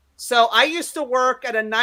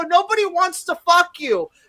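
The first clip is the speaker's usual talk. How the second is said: put-on raised yell, pitched high; 7 semitones higher than usual. Retelling blocking a girl from going backstage: imitating her own yelling. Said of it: "'cause I'm yelling at people".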